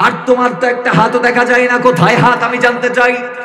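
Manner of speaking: intense, loud, high-pitched preaching.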